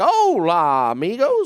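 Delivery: loud announcer voice in Spanish, hola drawn out. Retelling the ride's spanish announcement: imitating the ride announcer in spanish. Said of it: "they tried to do it again in Spanish".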